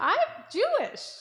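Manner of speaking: high, slow, loud mock-dramatic delivery.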